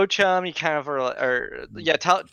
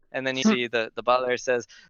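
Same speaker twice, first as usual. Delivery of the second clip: normal talking voice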